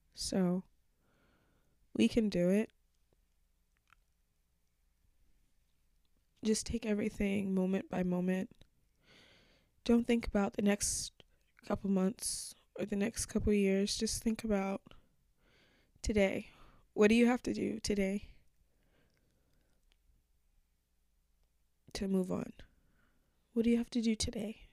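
tearful, crying while speaking. A podcast host speaking to listeners on the show, crying. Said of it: "I'm crying because this is something that's been on my heart".

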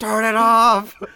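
very high, shrill, very loud screaming. Recalling the main character's big saving grace at the end: imitating a scream. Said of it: "when he's screaming".

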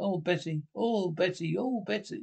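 slow, stretched, repeated drawn-out calling out. Showing a Frank Spencer impression after listing impressions everyone does: Frank Spencer impression. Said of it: "I can do impression of Frank Spencer".

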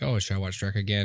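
usual speaking voice

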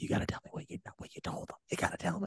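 hushed, breathy, barely voiced whisper. Retelling a movie scene where Blackie walks in: imitating Blackie whispering.

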